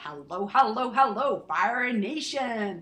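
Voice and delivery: attempted American accent. Quoting the Entrepreneurs on Fire podcast greeting: John Lee Dumas impression. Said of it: "That's me trying to do an American accent".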